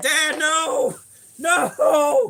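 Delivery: play-acted, raw, aggressive panic, high, loud yell. Retelling the kids hearing footsteps: imitating kids yelling in panic. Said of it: "I hear 'em just yelling".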